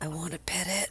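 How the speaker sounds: under the breath, very quiet. Voicing Ryfun reacting to a creature: very quiet, under his breath. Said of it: "just very quietly, under his breath".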